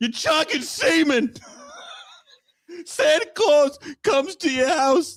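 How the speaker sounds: put-on very high, shrill, screeching yell. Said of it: "I need to stop yelling this".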